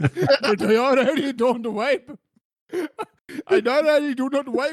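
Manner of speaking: put-on loud Indian accent. Retelling a scene where Neo answers Morpheus, in Indian Neo accent. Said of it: "I believe in your Indian accent".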